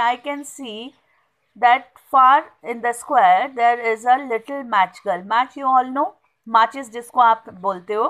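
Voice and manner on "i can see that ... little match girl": ordinary talk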